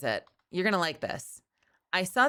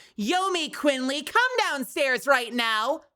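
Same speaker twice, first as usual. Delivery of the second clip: high, scolding parent voice, called out; 7 semitones higher than usual. Imagining being called by your full name, in trouble: imitating a mom scolding. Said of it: "calls you your full name".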